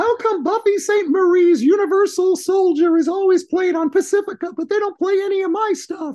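put-on goofy voice, very high and loud. Retelling a three a.m. phone call, goofy put-on Joni voice. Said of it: "this isn't really how Joni talks".

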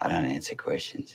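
menacing, threatening, stonewalling tone. Refusing to answer questions about threatening a woman: menacing. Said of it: "he's saying it in a menacing way".

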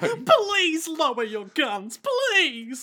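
put-on very high, slow, crying, pleading voice. Retelling a scene where a captive begs gunmen: crying Jacuzzi Splot voice. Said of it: "my jacuzzi voice".

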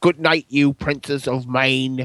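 exaggerated put-on cockney actor accent. Saying a Cider House Rules quote as the ending, use your most offensive Michael Caine voice. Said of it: "say it in my most offensive Michael Caine voice".

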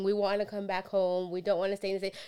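rushed, tearful speech through sobs. Retelling a wife's phone call to her husband, imitating someone sobbing. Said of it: "his wife was calling him sobbing".

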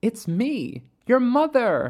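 gentle and unhurried. Mother Midnight, hand on Caleb's knee, speaks to him: soft, smiling. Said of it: "she said softly".

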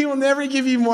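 speech through laughter. Quoting a saying about God, laughing while talking. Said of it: "I can't say it without laughing".

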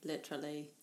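literally said in a put-on British accent. Teasing someone about gritty sand pictures: put-on british accent on literally. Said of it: "we always say literally with a British accent".

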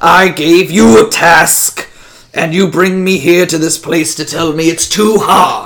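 loud, menacing, snarling demon voice. Narrating a scene, the demon answers a plea about an impossible task: snarling demon voice. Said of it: "the demon snarls".

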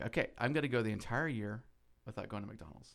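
plain

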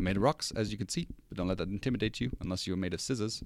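put-on New Zealand accent in a read-aloud delivery. Quoting Korg's prison introduction from Thor Ragnarok: Korg New Zealand accent. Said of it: "Your New Zealand accent isn't bad".

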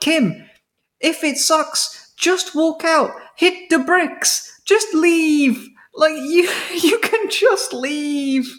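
put-on shouting. Recalling watching TV and yelling at Kim on screen: retelling screaming at the TV. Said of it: "I was screaming at the TV".

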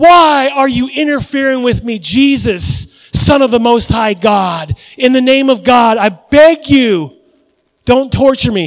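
put-on shrieking, screaming demon voice. Retelling what a shrieking man cried out to Jesus, retelling a shrieking scream. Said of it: "he's screaming, he's shrieking".

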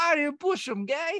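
put-on Jersey accent pushed very high. Quoting the main bully from the movie, imitating a Jersey accent. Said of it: "why did he sound Jersey?".

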